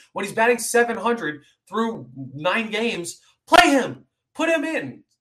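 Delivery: full-throated, high, ear-splitting yelling. Commenting on a baseball team's lineup choice, yelling. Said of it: "Sorry if I just blew out someone's eardrums by yelling like that".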